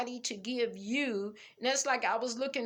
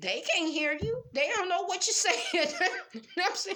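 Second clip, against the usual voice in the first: high talk bubbling with giggling laughter; 8 semitones higher than usual. A speaker addressing an audience of folks, laughing while talking. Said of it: "I'm getting tickled pink".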